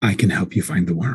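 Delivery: confiding, secretive, just-between-us tone. A character steps closer to offer help, in a much more hushed tone. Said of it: "in a much more hushed tone".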